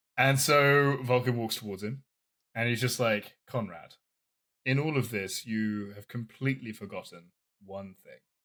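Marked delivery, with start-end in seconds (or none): 3.5-8.2 lowered, quieter, pulled-back voice. Retelling a story scene, one character to another, speaking a bit quieter. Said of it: "And he talks a bit quieter".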